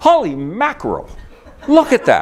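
high-pitched, excited yelling. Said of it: "Instead of yelling".

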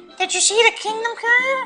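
tiny squeaky character voice, very high-pitched. Playing a Mario game and voicing Toad's line, Toad voice. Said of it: "After doing Toad's voice three times in a row".

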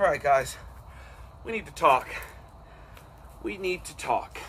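out of breath. Speaker addressing viewers during a walk, out of breath. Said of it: "As soon as I catch my breath".

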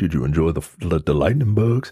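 very deep, low announcer-style voiceover voice. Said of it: "doing his voiceover work for Boyz two Men".

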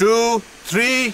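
slow, high, drawn-out, measured delivery.

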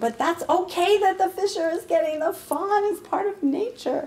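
acted-out, very high, shrill yelling. Speaker retells yelling at him after he carried a fawn inside; retelling yelling at him. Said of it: "I'm yelling at him going".

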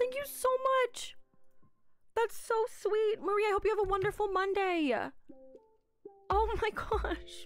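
choked-up, tearful voice close to crying. Thanking a viewer for a super chat: choked up, close to tears. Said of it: "we're not crying again".

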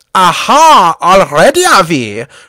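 booming, very loud, very slow, swooping, drawn-out bellow. Reading an air-fight story, the narrator voices the german climbing into the cockpit: shouted. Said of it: "shouted von Richthofen".

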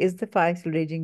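ordinary delivery

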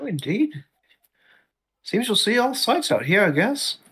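put-on high-pitched kobold creature voice. Player voicing a kobold adventurer in a tabletop game, kobold character voice. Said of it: "[name] hails from none of the continents. He hails from the Southern Kobold Empire".

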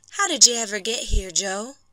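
gentle and tender. A wife asks her injured husband Joe how he got here, tender. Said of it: "she only asked tenderly".

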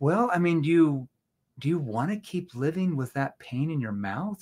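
disbelieving, confused but worried and concerned tone. Asking a prospect a question in a confused but concerned tone. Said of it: "That was more of a confused, like, I can't believe you said that. That doesn't make any sense, but yet a concerned tone".

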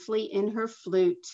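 ordinary delivery

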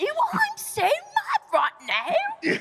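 very high, swooping, cross, sulky complaining voice. Imitating George saying he is mad: imitating George being mad. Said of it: "I don't sound like that either".

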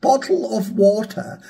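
posh English accent. Showing how someone would say a phrase, in a proper english accent. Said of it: "a sort of almost like proper English accent".

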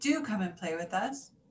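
ordinary talk

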